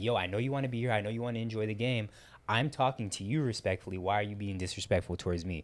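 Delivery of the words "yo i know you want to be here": ordinary delivery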